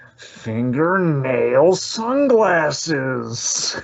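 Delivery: creepy but funny delivery. Retelling a creepy scene line: Louie Anderson impression. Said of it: "the Louis Anderson delivery".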